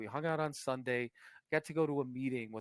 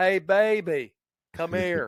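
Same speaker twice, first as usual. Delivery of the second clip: very loud, pitched-up put-on hillbilly drawl; 6 semitones higher, 12 dB louder than usual. Speaker redoing a come-on line for listeners, in a fake hillbilly accent. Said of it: "fucking hillbilly accent".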